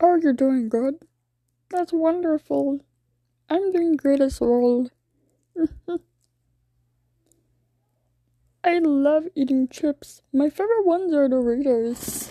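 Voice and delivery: high, puppet-like cartoon frog voice. Showing off impressions one by one, the speaker chats as Kermit: Kermit the Frog voice. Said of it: "that's my Kermit the Frog voice".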